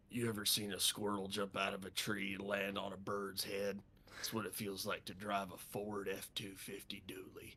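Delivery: commercial voiceover announcer delivery. Asked for a quick truck ad read, the speaker delivers a Ford truck ad read. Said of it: "Ford F one fifty ad read really quick".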